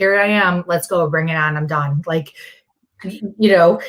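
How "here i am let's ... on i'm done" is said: ordinary delivery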